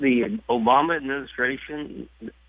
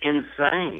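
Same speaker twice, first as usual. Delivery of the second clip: insane hit hard with heavy stress. A caller gives an opinion on an issue, stressing the word insane. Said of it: "I emphasize the word insane".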